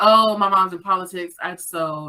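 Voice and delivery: ordinary delivery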